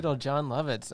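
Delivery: normal talking voice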